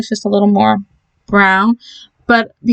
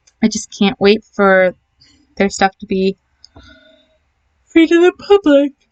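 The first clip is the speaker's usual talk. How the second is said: sleepy, talking through a yawn. Talking to viewers about downloading custom content, yawning. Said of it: "And I'm yawning again".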